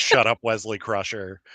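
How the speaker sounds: ordinary talk, nothing marked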